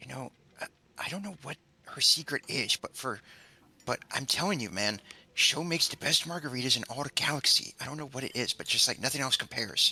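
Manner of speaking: hushed whisper. Voicing a character leaning over at the bar, out of the bartender's earshot: whispering. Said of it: "I'm leaning over to whisper to him".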